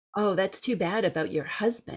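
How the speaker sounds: usual speaking voice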